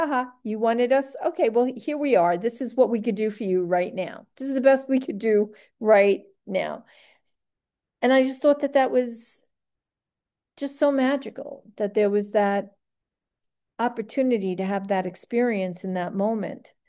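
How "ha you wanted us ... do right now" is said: put-on taunting, mocking laughter. Retelling how they answered after he called them in, imitating them laughing at him. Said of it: "laughing at me".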